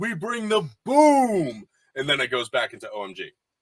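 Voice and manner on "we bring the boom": high, slow, drawn-out belted yell. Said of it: "Big Justice and his dad yelling".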